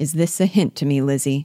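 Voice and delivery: ordinary delivery, nothing marked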